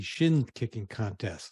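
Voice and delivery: very slow, deliberate, drawn out word by word. Discussing unique customer value with another speaker, said very slowly. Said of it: "I have to say that very slowly".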